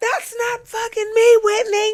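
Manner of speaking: put-on shrill, very high screaming outburst. Retelling an argument where Lisa screamed: imitating someone screaming. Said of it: "she was screaming".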